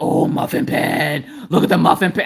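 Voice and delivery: mock, slow, excited, childlike delight. Retelling a reaction to getting a new muffin pan: imitating Mister Coffee's excitement. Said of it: "he was like a kid on Christmas".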